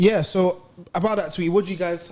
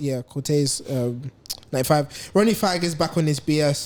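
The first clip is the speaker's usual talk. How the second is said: ordinary delivery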